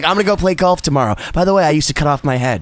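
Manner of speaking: very low, calm, easy delivery. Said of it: "he's just so calm".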